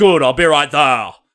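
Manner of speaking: very loud bellow with awful line delivery. Quoting a line from Troy before a battle scene, Eric Bana's terrible accent delivery. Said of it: "the delivery of that line is fucking awful".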